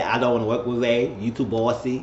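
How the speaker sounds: ordinary delivery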